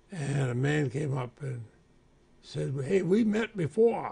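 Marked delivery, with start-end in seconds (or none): 2.8-4.1 put-on very thick, broad Vermont accent, high. Retelling how a man came up and spoke to you, in a very thick Vermont accent. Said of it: "with a very thick Vermont accent".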